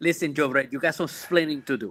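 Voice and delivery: own natural Puerto Rican accent. Showing the others his accent after being asked: Puerto Rican accent. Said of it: "I can give you my accent if you want".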